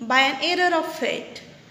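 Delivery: ordinary delivery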